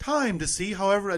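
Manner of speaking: attempted British accent. Announcing a poll result on Living in Style, the speaker tries an attempted British accent. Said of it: "I can't do it".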